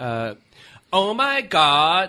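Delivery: put-on Southern California accent. Quoting East Coast relatives reacting to how the speaker talks, Southern California accent impression. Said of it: "Like that's how people from Southern California".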